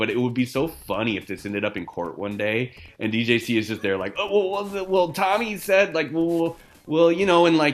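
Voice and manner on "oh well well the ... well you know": pitched-up, unhappy, hesitant, uncertain dithering voice. Imagining someone testifying in court: imitating DJC's unhappy, uncertain voice. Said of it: "he's just doing this voice".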